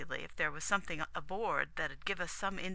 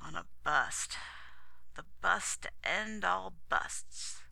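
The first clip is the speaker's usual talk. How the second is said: worn out, weary and tired. Reading a story: a captain answers the Commodore's question about his absence, weary. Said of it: "said wearily".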